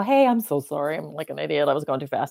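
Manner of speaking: mock, plainly sorry, remorseful tone. Retelling own words to the police after being pulled over: imitating own remorseful apology. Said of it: "I act remorseful or whatever".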